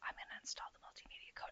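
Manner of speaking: whispering. Narrating a software install to no one who could hear, whispering. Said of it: "I don't know why I'm whispering".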